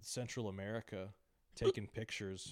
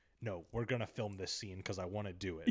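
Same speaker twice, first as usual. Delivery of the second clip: normal talking voice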